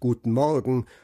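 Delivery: ordinary delivery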